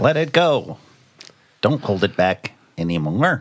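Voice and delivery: very slow, faintly robotic delivery, slight robot voice. Answering a quiz question in a put-on voice: a little robot voice. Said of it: "I'm doing a little bit of a robot voice now".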